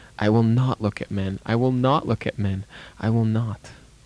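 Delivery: ordinary delivery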